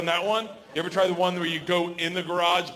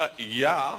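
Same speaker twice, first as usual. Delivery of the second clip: put-on scoffing woman voice, lower; 4 semitones lower than usual. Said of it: "She's like".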